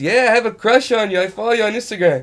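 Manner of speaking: very high, loud, very broken English. Retelling a friend's beach pickup line: imitating a friend's broken English. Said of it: "his English is very broken".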